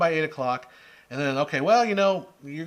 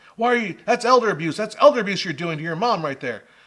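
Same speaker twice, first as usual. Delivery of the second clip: put-on loud, accusing yell; 4 semitones higher, 5 dB louder than usual. Retelling a stranger's accusation: imitating a man yelling. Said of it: "He starts yelling at me".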